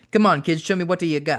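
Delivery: put-on Italian accent. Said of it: "He spoke on T V with a heavy Italian accent".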